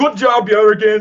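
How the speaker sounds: high-pitched, loud shout. Voicing a character yelling back while running: yelling while running. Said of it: "I yell behind me as I run".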